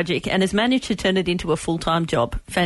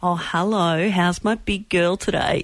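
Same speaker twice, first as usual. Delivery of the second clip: put-on warm fatherly voice. Co-host retelling overhearing the other on the phone to his daughter, imitating a warm daddy voice. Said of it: "your warm daddy voice".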